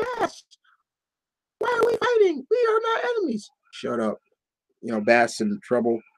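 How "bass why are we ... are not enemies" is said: put-on very high, girlish-sounding boy voice. Recalling an old anime, imitating Mega Man's girlish voice. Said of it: "he sounded like a girl did his voice".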